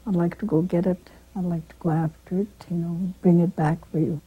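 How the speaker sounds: ordinary delivery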